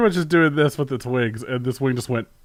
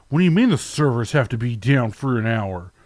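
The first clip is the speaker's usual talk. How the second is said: huffy, indignant, angry and outraged disbelief. Mocking how angry players complain when the servers go down: imitating angry gamers, mocking. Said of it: "they get very angry when anything happens".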